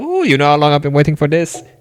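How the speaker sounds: put-on very loud, heavy, swooping thick Cajun French accent. Describing your favorite movie cameo: thick Cajun French Gambit accent. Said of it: "with his thick Cajun French accent".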